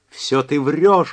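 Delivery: ear-splitting, shrill, piercing, loud shriek. A narrator reads a woman's outburst at another character, piercing shriek. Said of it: "пронзительно крикнула она".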